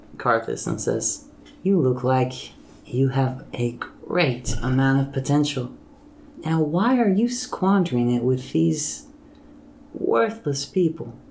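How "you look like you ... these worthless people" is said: dark, sultry, spellbinding, hypnotic voice. A narrator voices a woman turning to speak to Karthus, in a sultry, dark, hypnotic voice. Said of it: "It's really, like, sultry and dark, like, hypnotic, her voice is. ... like, sultry and dark".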